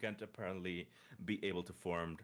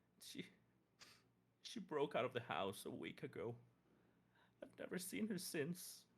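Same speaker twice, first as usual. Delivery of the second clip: sobbing, much higher pitch, quieter; 7 semitones higher, 4 dB quieter than usual. In role-play, a woman tells of the girl she raised breaking out, sobbing while talking. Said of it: "Between st- still sobbing".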